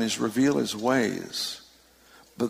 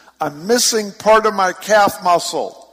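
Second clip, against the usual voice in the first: high, loud, slow yell. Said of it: "she stands up and she yells".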